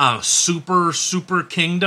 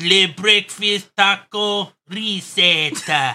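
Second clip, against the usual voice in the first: hammed-up, bad fake Mexican accent; 3 semitones higher than usual. Retrying an accent bit after a first attempt, put-on Mexican accent. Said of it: "let me try it again".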